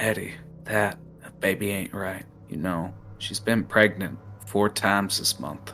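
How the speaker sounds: quiet, hushed, secretive murmur under the breath. Voicing a character who passes a doobie and speaks: hushed tones. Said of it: "he just says in hushed tones".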